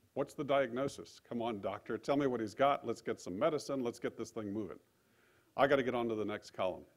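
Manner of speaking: plain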